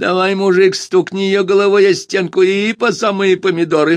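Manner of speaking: very high voice, through the nose. Reading a story, a man's remark to another man, in a nasal voice. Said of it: "гнусаво произнес он".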